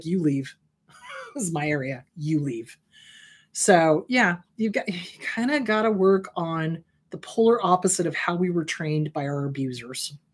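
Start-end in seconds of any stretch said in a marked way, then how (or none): 0.0-2.8 mock unyielding, low, firm voice. Speaker recounts confronting family members, retelling a firm confrontation. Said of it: "I stood my ground. I was like".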